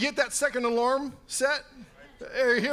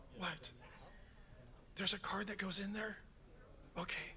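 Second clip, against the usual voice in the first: very quiet, hushed whisper under the breath; 3 semitones lower, 17 dB quieter than usual. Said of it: "I don't know why we're whispering".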